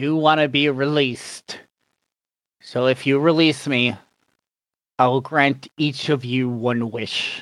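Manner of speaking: powerful, imposing bound genie voice. Voicing a chained djinn speaking to the players; chained djinn voice. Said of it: "He is a djinn. Okay. He is a very tall blue djinn who he definitely looks a lot more older and more powerful than regular djinn. / The chains are attached to manacles binding a large, imposing figure".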